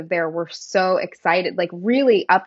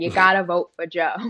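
put-on thickest, heavy, broad Boston accent, laid on. Recalling canvassing for Joe Kennedy, thick Boston accent. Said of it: "I got my thickest Boston accent".

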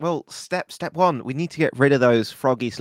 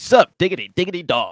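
punchy, emphatic, powerful, forceful delivery; 3 semitones higher than usual. Correcting a learner's try at a cool greeting, said with power. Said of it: "Didn't say it with enough power".

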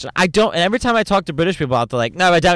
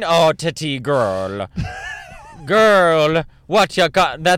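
put-on Jamaican accent. Speaker trying an Irish accent that comes out wrong; accidental Jamaican accent. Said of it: "That's Jamaican".

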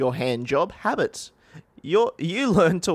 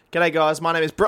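usual speaking voice

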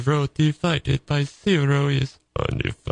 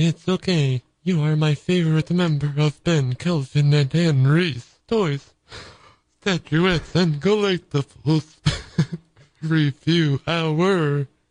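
put-on synthetic computer-speech voice. Replying to an apology addressed to Stephen Hawking, in a Stephen Hawking voice. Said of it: "Well, Stephen Hawking".

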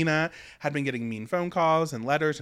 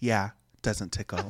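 whispered impression, lower; 7 semitones lower, 3 dB quieter than usual. Quoting a line from the season in a whisper: imitating Dina's whisper. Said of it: "this whisper".

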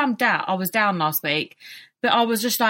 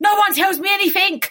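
put-on, tearful, high-pitched screaming outburst; 9 semitones higher, 4 dB louder than usual. Recalling a discussion she overheard, the speaker reenacts her outburst: retelling a scream. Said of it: "I just started screaming".

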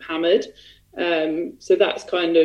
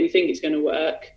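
normal talking voice

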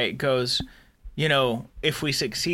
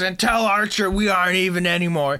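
character scream, higher in pitch and louder; 5 semitones higher, 4 dB louder than usual. Retelling a scene where Shran screams into the monitor: Shran screaming. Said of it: "he screams into the monitor".

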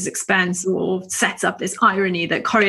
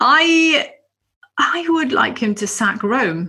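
very slow, friendly, affable and gentle delivery; 4 semitones higher than usual. Guest answers the host's question about the play, affable, gentle voice. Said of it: "you said it in this like very... affable, gentle voice".

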